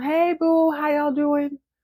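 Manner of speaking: mock, high, hollering shout. Imitating a woman past seventy on a phone call; imitating shouting into a phone. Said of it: "She's shouting into the phone".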